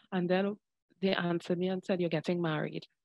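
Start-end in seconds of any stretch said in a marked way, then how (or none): none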